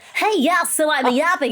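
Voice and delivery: put-on, unnatural, high, creepy kindergarten-teacher voice. Retelling own attempt at a yap video: imitating own creepy kindergarten-teacher voice. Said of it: "I have this voice that's not even my own".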